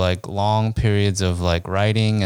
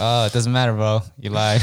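plain

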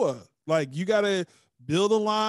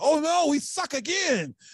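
goofy, high, put-on movie-dude character voice; 7 semitones higher than usual. Comparing someone to the dude from The Waterboy: voice of the dude from The Waterboy. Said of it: "he's like the dude from The Waterboy".

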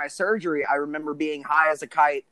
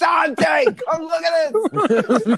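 very high, loud, drawn-out acted scream, doped-up sounding; 13 semitones higher, 6 dB louder than usual. Retelling having a finger yanked, acting out screaming for dante to come look. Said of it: "I'm screaming".

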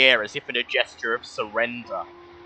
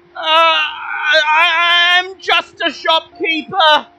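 scared stammer, much higher and louder; 9 dB louder than usual. Game master voicing a terrified hidden person after a persuasion check: scared stammering voice. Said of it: "you hear a obviously very scared voice stammer out".

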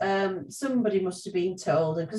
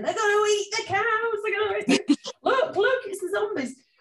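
mock children shrieking, much higher; 13 semitones higher than usual. Recounting how all the children shrieked at the cattle, imitating kids shrieking. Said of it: "we were all shrieking and shouting".

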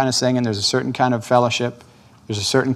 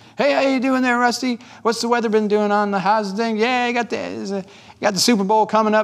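very high, light head voice; 9 semitones higher than usual. Demonstrating how people chat casually in their head voice, high head voice. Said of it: "That's up here. That's high".

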